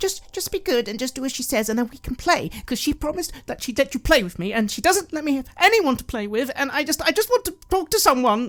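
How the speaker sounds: high, eager, pleading, excited voice. Voicing Carmilla leaning forward to a player: excited, eager voice. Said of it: "someone much closer to you begins leaning forwards, looking excited".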